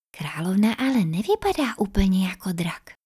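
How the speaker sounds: in a whisper. Izzy speaks to Luna about the dragon queen, whispering. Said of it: "šeptala Izzy".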